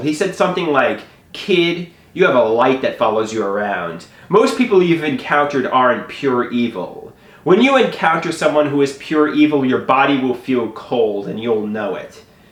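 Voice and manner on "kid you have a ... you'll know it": usual speaking voice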